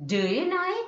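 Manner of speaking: high rising, hopeful intonation. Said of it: "always it is rising tone".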